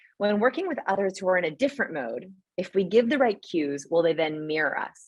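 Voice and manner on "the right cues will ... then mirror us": ordinary talk, nothing marked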